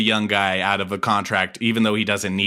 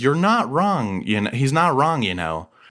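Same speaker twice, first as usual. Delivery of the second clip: ordinary talk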